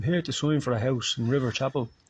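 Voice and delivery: heavy put-on Dublin accent. Retelling someone arriving to sign for a house: imitating a strong Dublin accent. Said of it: "strong Dublin accent comes in and says".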